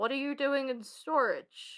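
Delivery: slow, strange, weird echoing voice. Narrating what the players hear from around the corner, in a weird echoing voice. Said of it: "in a weird echoing voice".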